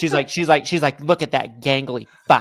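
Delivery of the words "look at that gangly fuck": fed-up, irritated, pissed-off tone. Retelling what his wife said while watching Wemby on TV: imitating wife pissed off. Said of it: "she's just pissed".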